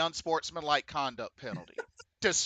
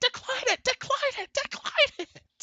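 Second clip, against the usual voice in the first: very high-pitched, urgent, repeated yell. Recounting watching the kick, he repeats what he shouted: retelling a yell at the tv. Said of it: "I was literally like yelling at my T V".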